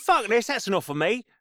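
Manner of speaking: put-on rural country accent. Re-enacting a man at a seance who wanted out, in a rural country accent. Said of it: "Yeah, there you go".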